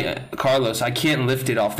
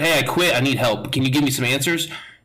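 ordinary talk

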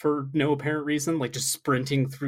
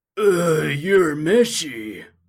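put-on old man voice, louder; 2 semitones higher, 7 dB louder than usual. Showing how a character sounds: imitating Kuwabara. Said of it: "he sounds like a".

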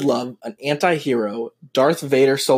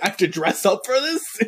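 irritated, indignant, fed up, affronted, pitched-up outrage; 7 semitones higher than usual. Retelling a Rogue One scene, imitating a pissed-off Darth Vader. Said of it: "that's why he's so pissed off".

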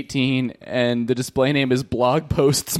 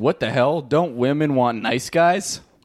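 ordinary talk

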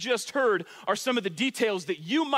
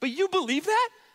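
pitch climbing very high at the end; 9 semitones higher than usual. Showing how to ask the question, voice rising high at the end. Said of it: "the first time I've said it well without my voice cracking".

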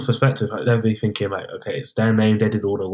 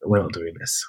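put-on whisper, lower and quieter; 5 semitones lower, 5 dB quieter than usual. Acting out what to say at an unwanted proposal: acting out a whisper. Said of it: "whispering in my ear".

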